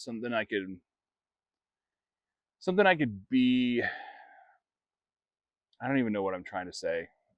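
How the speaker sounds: fighting tears, holding back crying. Telling their story of moving away for work, holding back tears. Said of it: "I'm just trying not to cry".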